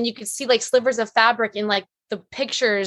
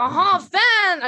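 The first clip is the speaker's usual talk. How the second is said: exaggerated put-on French accent, much higher pitch; 8 semitones higher than usual. Recalling how everyone imitated Mogli, Mogli impression, racist French accent. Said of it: "the most racist French accent I've ever done".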